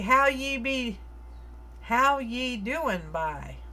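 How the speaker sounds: slow, put-on Newfoundland accent. Painting and chatting with viewers, the speaker shows a greeting: put-on Newfoundland accent. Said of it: "you're like that guy from Ice Road Truckers".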